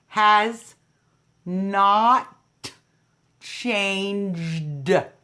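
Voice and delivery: very slow, deliberate, every word spaced, not stretched. Host of Trump Talk stating the campaign's position so everyone hears, said real slow. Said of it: "I said it real slow".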